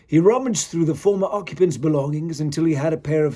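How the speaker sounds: ordinary delivery, nothing marked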